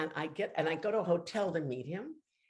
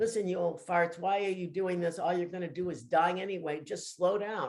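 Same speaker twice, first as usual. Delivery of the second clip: ordinary talk, nothing marked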